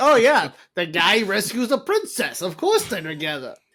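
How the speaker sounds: loud, swooping, sing-song voice. Chatting with the group, dropping into a Mario voice. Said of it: "In your Mario voice".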